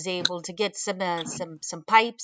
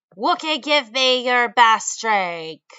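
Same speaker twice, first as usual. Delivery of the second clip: loud yelled voice; 4 semitones higher, 5 dB louder than usual. Narrator voices a bug-like flying creature coming through the door, yelling. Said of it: "he starts yelling".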